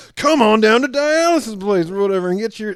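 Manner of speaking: very high, loud hard-sell car salesman patter. Describing an ad selling dialysis treatment, in a used car salesman voice. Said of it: "he's selling them to you like he's like a used car salesman".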